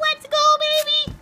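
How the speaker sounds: very high, fake, squeaky voice. Before a cinnamon challenge, a player introduces himself: fake high-pitched voice. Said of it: "I'm talking high pitch".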